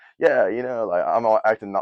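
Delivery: ordinary delivery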